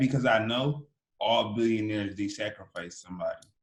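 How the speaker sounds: usual speaking voice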